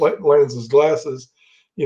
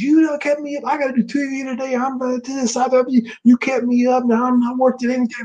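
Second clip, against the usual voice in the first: mock screaming, much higher; 9 semitones higher than usual. Retelling how she screamed at him for keeping her up, imitating someone screaming. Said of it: "screaming at him".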